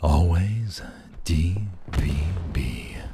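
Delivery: sensual manner. Speaker trying the same phrase again, one more time, in a sensual voice. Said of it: "Do it one more time".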